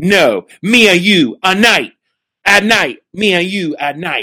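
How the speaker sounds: high, sing-song wrestling promo delivery. Retelling how she answers in her promo: imitating her promo line. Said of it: "And she'll go".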